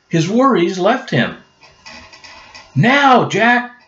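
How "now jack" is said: very high calling out. Annie calls to Jack while he dances among the knights, crying out. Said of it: "Cried Annie".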